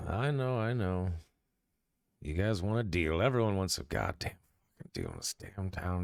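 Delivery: muttered character voice. Narrator voicing Schnez as he sees the players talking, Schnez muttering under breath. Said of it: "He kind of like mutters under his breath".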